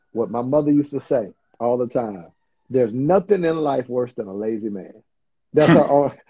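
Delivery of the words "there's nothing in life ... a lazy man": ordinary talk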